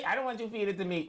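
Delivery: ordinary talk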